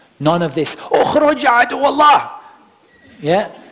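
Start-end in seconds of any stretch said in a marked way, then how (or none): 0.8-2.4 very high, shrill, scolding scream. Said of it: "don't shout or scream".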